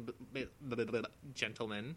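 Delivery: slow stutter on b, b-b-b. Starting a submission with a stutter: Porky Pig stutter. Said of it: "now you've replaced Bane and Yoda with Porky Pig".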